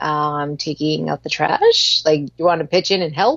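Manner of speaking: mock light, playful, teasing joking tone. Retelling own reply to a woman while picking up trash: retelling own joking reply. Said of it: "sort of jokingly".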